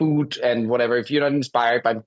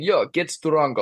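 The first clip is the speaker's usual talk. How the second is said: put-on Russian accent, higher pitch; 4 semitones higher than usual. Imitating Polish athletes urging racers on, in a put-on Russian accent. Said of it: "That was a Russian accent".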